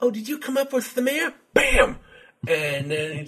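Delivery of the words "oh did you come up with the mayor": very high-pitched put-on boxer voice. Retelling a video game fight, voicing the opponent: Mike Tyson impression. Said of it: "Mike Tyson impression's pretty good".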